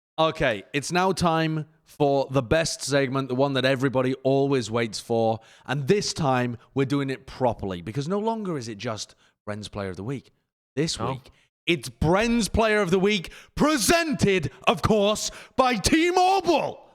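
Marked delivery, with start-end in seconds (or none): 10.8-16.8 put-on, very high, climbing, hyped-up announcer shout. Announcing the best segment of the show: Bren impression, shouting. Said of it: "I'm doing my best Bren impression".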